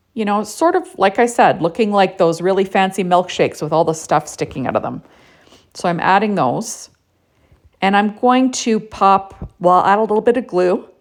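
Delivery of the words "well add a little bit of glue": words pulled out of shape by a yawn. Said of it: "Excuse me, I'm yawning".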